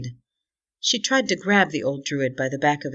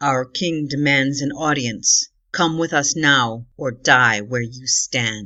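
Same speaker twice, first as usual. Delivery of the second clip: deep, low, rumbling growling voice; 3 dB louder than usual. A narrator reads a winged gorilla's demand to the group, deep growling voice. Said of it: "He spoke in a deep, growling voice".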